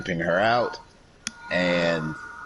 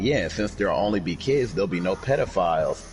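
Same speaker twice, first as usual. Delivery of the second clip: usual speaking voice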